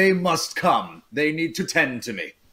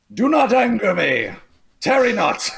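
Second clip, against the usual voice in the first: raised, slow, lordly, intimidating, menacing voice; 6 semitones higher, 4 dB louder than usual. Intimidating the townsfolk in character: raised menacing voice. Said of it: "cower when he raises his voice".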